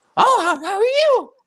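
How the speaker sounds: very high, squeaky cartoon voice. Imitating grandpa's friend greeting people, in a Mickey Mouse voice. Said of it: "He sounds like Mickey Mouse".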